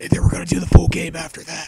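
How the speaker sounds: quiet, awkward whispering. Greeting viewers late at night while a roommate sleeps, whispering awkwardly. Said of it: "whispering really stupidly and awkwardly".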